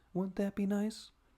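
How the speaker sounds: surprisingly soft, gentle voice. Recapping a scene, Fury walks up on a child, shockingly soft voice. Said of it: "with a shockingly soft voice tells it".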